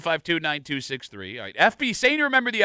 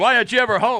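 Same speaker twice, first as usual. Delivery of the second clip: put-on screaming, high-pitched and very loud; 5 semitones higher, 5 dB louder than usual. Joking about a fake agent's family: acting a screaming wife. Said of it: "his fake wife and kids screaming".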